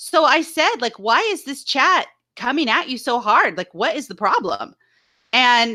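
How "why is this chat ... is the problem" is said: usual speaking voice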